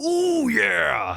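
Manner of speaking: rough, raspy, very high "ooh yeah", wrestler-style. Introducing a Pontoon Brewing beer, speaker does a Macho Man Randy Savage 'ooh yeah'. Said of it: "I can't even do an ooh yeah very well".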